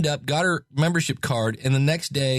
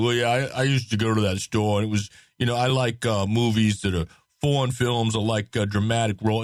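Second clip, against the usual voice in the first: put-on rambling New York tough-guy accent; 3 semitones lower than usual. Retelling what an interviewed New Yorker said, in a Rocky Balboa voice. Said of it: "the whole Rocky Balboa kind of thing going on".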